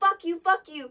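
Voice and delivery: mock screaming, loud and high-pitched. Retelling throwing a bottle at a customer, retelling own screaming.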